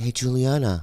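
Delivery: acted whisper. Retelling knocking on a door: imitating his own whisper. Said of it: "I knock on her door and I whisper".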